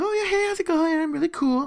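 very high, bubbly, happy-go-lucky gushing chirp. Retelling meeting a woman from Toronto who came in super happy-go-lucky: mimicking her bubbly manner. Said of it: "she's like super happy-go-lucky".

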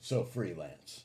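put-on low, patronizing, talking-down tone. Retelling people questioning the speaker's freelance status, mock-condescending tone. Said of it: "it's this tone of voice that's like".

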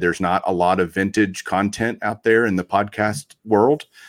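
plain

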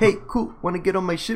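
terrible fake New Zealand accent. Quoting a movie character from a scene, in a terrible New Zealand accent. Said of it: "It's slightly spot on".

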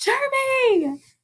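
calling out, high and drawn out.

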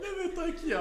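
high, laughing through the words, bubbling with laughter. Reacting to another speaker's story about wearing diapers to school, laughing while talking. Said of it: "Eu tô rindo com respeito".

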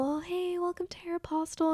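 shy, tiny, high, quietest little voice. Retelling how a shy self greeted customers at a store job: retelling a very quiet greeting. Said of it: "in my quietest voice".

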